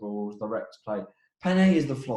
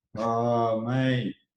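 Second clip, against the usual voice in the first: unenthusiastic, reluctant delivery. Answering after being told to go first again: unenthusiastic. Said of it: "Don't sound too happy".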